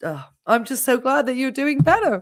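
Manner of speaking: fast, tearful, close to tears, spilling out. A nurse speaking to someone who is doing better, tearful. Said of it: "You're making me cry now".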